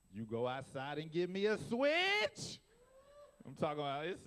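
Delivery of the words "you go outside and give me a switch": mock angry grandma voice, very loud, swooping, scolding. Telling about a grandma who gets real loud, acting her out: imitating a loud grandma. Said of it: "she gets real loud".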